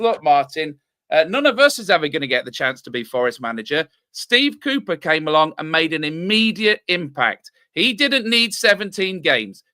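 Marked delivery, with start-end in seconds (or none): none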